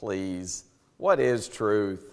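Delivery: slow, dismissive scoffing voice. Acting out Pilate's reply to Jesus, acting out a scoff. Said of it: "This is a scoffing".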